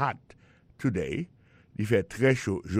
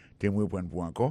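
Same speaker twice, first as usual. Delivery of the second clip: ordinary talk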